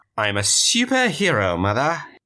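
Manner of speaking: effete, put-on British accent. Retelling how he answered his mom in character: effete British Blue Raja accent. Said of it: "An effete British superhero".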